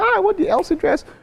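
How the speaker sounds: very high, smitten, adoring voice. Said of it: "someone sees her now in this Elsie dress and say".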